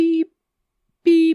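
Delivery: high-pitched space beeping.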